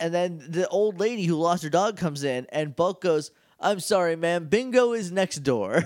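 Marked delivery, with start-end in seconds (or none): 3.6-5.8 put-on courteous, businesslike, very polite, matter-of-fact tone. Retelling how an old lady is told to go next door: imitating a matter-of-fact polite line. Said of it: "Very matter-of-factly, very polite".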